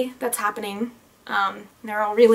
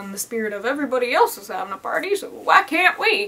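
strange, weird, off-kilter put-on country accent. Talking about friends planning their own party, slipping into a weird country accent. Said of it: "I decided to have a weird country accent there".

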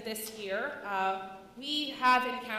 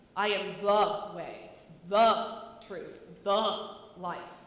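every "the" given weight; 4 semitones lower, 3 dB louder than usual. Showing how people have emphasized the word 'the': stress on each 'the'. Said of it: "Sometimes we have emphasized the word the, making Jesus' words sound threatening".

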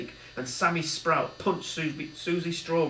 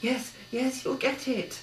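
under the breath, higher pitch; 8 semitones higher than usual. Narrator reads a gang member speaking as he reaches for a box, said to himself. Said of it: "said Billy to himself".

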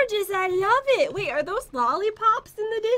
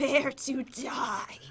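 breathy, spooky, creepy whisper; 7 semitones lower, 7 dB quieter than usual. Announcing the start of a deathmatch: trying to sound scary. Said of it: "Did I sound scary?".

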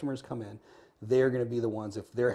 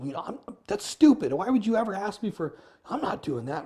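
angry, indignant, loud, shrill tone; 9 semitones higher, 6 dB louder than usual. Showing what many people would say to the customer: imitating an angry reply. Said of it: "they'd get angry back".

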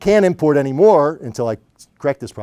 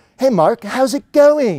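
put-on cheery, breezy Australian accent, high and swooping; 8 semitones higher than usual. Retelling a phone call, the speaker imitates Jeff greeting him: Jeff's cheery Australian accent. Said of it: "in his annoyingly cheery Australian accent".

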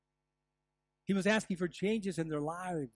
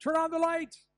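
high, loud yell. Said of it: "I could have simply yelled".

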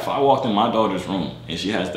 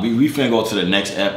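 normal talking voice

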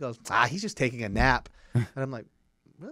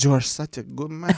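mock drunk speech, higher and louder; 3 semitones higher, 6 dB louder than usual. Retelling what a very drunk guy kept saying: imitating a drunk man. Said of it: "this guy was so drunk".

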